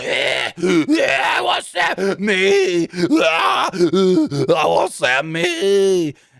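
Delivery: throat-straining, very slow and swooping. Retelling a backstage segment, imitating Kevin Owens straining his throat. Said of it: "I hurt my throat just trying to do it".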